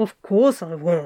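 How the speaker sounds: muffled, smothered mumble. A narrator reads a character's reply from the bed, mumbled into the pillow. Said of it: "Crowley mumbled into the pillow".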